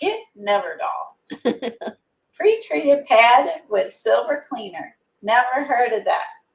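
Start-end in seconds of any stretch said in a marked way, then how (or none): 0.0-5.0 swooping TV infomercial pitchman hard sell. Trying out a silver-cleaning pad, a speaker pitches it in an infomercial announcer voice. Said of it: "That just sounds like a good infomercial".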